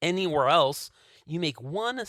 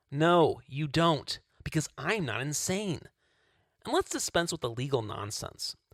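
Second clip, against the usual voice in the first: normal talking voice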